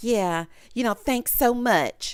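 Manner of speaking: sarcastic, insincere, mock-grateful tone. Retelling what a woman said to her partner: imitating sarcastic thanks. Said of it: "being sarcastic".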